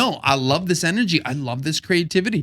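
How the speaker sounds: normal talking voice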